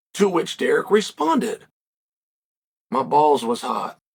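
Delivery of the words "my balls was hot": very low, slow, plain deadpan delivery. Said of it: "But he said it like that".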